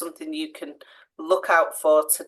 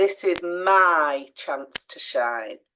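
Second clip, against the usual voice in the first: main emphasis on the word my. Reading example sentences aloud to show meaning, stress on my. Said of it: "emphasizing who's who's going to shine. It's my chance".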